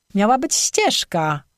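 bristling, offended, affronted, indignant. Reading the girl's reply to Krystian's teasing: indignant. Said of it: "obruszyła się dziewczyna".

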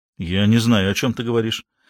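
ordinary delivery

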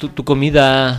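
mock, slow, stretched-out catcalling tone.

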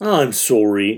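put-on Canadian accent. Imitating how Alex apologized in the episode: Alex's Canadian sorry. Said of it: "like a really good Canadian sorry".

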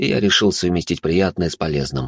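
plain reading voice

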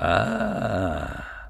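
low, wary, suspicious drawn-out ah. Reminded of his own earlier remark, a man answers with a suspicious drawl. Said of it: "подозрительно протянул голодец".

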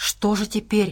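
muttering. Narrator reads Abrams after the Bear Cub's outburst, muttered. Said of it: "пробормотал Абрамс".

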